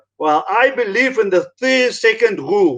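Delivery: put-on thick, heavy German accent. Retelling what a man said back to him, in a thick German accent. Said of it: "thick German accent".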